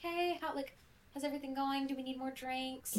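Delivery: soft, friendly waiter-style voice. Describing a pose and tone at the table by imitating a waiter mid-meal. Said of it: "the waiter comes over and they're like".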